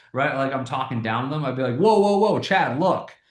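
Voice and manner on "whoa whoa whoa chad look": voice raised, pitched higher. Speaker demonstrating a pattern interrupt to grab someone's attention: raised voice to interrupt. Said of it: "continuing to raise my voice".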